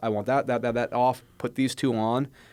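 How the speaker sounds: normal talking voice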